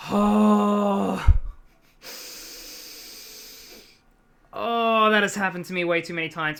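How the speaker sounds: loud, hurting, pain-filled voice with drawn-out "oh". Speaker reacting to a story about lying awake until 4 a.m., in a pained voice. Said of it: "the reason why I sound so pained".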